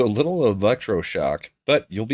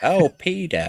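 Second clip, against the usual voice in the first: high, squeaky cartoon-style voice; 6 semitones higher than usual. Joking in a group about a cartoon character, saying it in Lois voice. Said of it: "hear it in Lois's voice".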